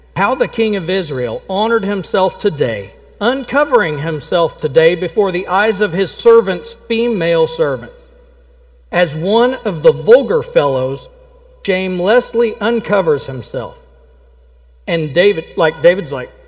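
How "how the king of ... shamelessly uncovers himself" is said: ordinary delivery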